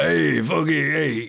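put-on rough, high old New York man's accent. Listing the voices Jeff does, perform Jeff's old New Yorker man voice. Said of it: "He has an old New Yorker man".

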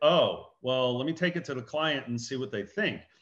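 ordinary talk, nothing marked

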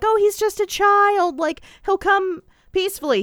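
play-acted, very high-pitched begging. Speaker recaps a TV episode's final scene with police at the door: imitating Constance pleading. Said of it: "Constance is like pleading".

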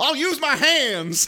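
very high, shrill battle shout, acted out. Describing a funny scene, the speaker acts out Misty's line: retelling Misty's yell. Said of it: "Misty just yells".

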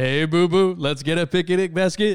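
big, loud cartoon bear character voice. Explaining a cartoon bear to listeners, doing a Yogi Bear voice. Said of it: "you know Yogi the Bear".

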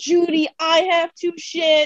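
acted, desperate scream, high-pitched and urgent. Retelling screaming to someone across a parking lot, retelling a scream. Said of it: "the parking lot screaming".

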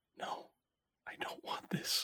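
very quiet, soft, hushed whisper. Game master voicing a dwarf after a player's persuasion check, whispering. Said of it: "just whispers".

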